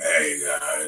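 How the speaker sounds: put-on low grumble. Describing how they sound right after waking up, imitating their deep dark morning voice. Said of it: "my voice is really dark, really deep".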